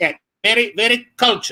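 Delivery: high drag queen voice, Filipino manner. Telling a story about doing a show, imitating a filipino drag queen. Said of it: "a Filipino drag queen who spoke like this".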